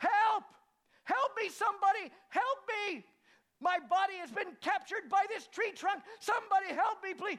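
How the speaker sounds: shrill, very loud, high-pitched shouting. Telling a story, acting out the master clutching a tree trunk: retelling someone shouting for help. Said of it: "started shouting".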